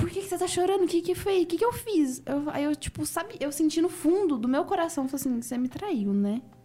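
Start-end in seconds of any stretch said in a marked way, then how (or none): 0.0-2.2 put-on very scared, drunken, high-pitched voice. Speaker retells what a drunk man asked when the speaker began crying: retelling someone scared. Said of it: "muito assustado".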